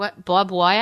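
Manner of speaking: put-on mimicked Long Island accent. Recalling translating their parents' speech for other people, in their parents' Long Island accent. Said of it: "my parents' Long Island accent".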